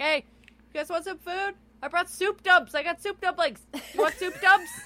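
play-acted, very high, shrill yell projected across room. Recapping a show, the speaker acts out Jared calling across to Molly: imitating Jared yelling across. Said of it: "yelling across at Molly and them".

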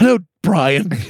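high, animated cartoon character voice. Describing a performer's silly bit, quoting him doing the Stewie voice. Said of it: "Like do the Stewie voice?".

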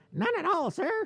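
tiny, very high fairy-like voice. Contrasting how ensigns talk with macho commanders: ensign talking like a fairy. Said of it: "Ensigns talk like this, like fucking fairies".

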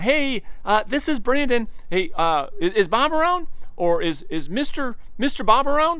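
very high-pitched, telemarketer-style phone voice. Showing the voice people use on outbound sales calls: high-pitched phone voice. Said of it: "That high, high, high pitch, that phone voice".

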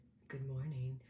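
cavernous, super deep, low bass voice. Imitating how someone would have said it: super deep voice. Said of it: "with his like super deep voice".

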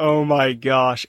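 put-on embarrassed voice. Recalling listening back to an early recording, acting out past embarrassment. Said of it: "I'm listening to it so embarrassed".

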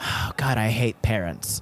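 mock muttering under the breath. Quoting a therapist who said this to herself, imitating someone muttering. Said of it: "This was a quote to herself under her breath".

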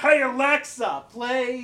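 full-on, shrill, very loud scream. Retelling a TikTok video of a drag queen calling to Alexa, retelling a scream. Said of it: "One of them screams".

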